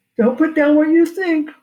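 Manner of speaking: words stretched by a yawn. Explaining how to value what you own, while yawning. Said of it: "Sorry, yawning".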